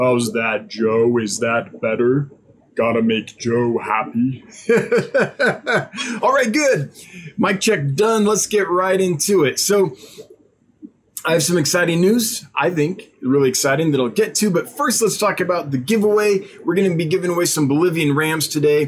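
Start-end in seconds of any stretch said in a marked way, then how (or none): 0.0-4.4 low, slow deep voice. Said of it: "So no deep voice".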